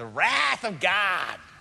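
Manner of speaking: very slow, drawn-out, loud American accent. Showing how to say the word wrath in america, american accent. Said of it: "you want to say it in America".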